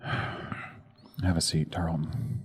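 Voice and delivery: weary, soft, slow, hushed whisper.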